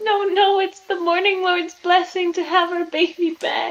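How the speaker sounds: high voice, weeping through every word. Voicing a woman pleading about her son, acted crying. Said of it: "she's just keeps crying. She's like".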